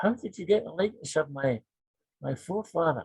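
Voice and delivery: put-on small, wee, high-pitched elderly woman's voice. Retelling a phone call from an elderly caller, imitating a wee old high-pitched voice. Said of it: "this wee old high-pitched voice".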